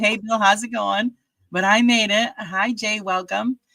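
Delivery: winded, panting, still catching breath. Arriving back online after running downstairs, greeting the others, out of breath. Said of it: "out of breath. Trying to catch my breath".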